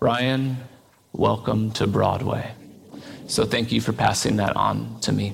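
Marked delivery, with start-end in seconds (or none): 0.0-2.5 put-on really deep, very low voice. Recalling a voice heard in the parlor, imitating a really deep voice. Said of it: "I just heard this really deep voice say".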